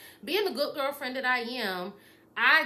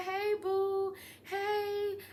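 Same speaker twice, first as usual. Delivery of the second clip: mock high, thrilled, excited voice; 8 semitones higher, 3 dB quieter than usual. Retelling a boyfriend's greeting when she walks into his job: imitating an excited boyfriend. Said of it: "he is excited".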